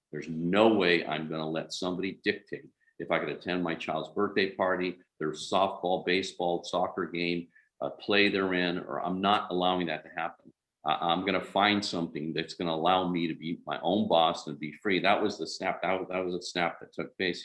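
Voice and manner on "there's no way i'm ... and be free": usual speaking voice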